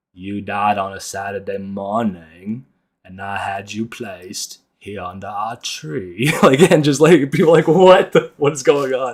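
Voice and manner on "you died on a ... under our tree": southern drawl, slow and soft. Retelling a drunk classroom monologue performed in front of class, Forrest Gump voice. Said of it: "I like put on the Forrest Gump voice".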